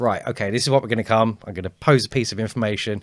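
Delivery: loud, bold, strong delivery. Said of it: "I will come on bold, strong".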